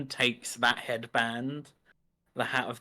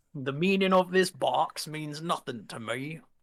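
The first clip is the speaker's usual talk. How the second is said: put-on Bristolian pirate accent; 4 semitones higher than usual. During a role-play session, a player voices a character in a Bristolian pirate accent. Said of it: "You gone for a Bristolian pirate".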